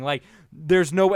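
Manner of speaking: normal talking voice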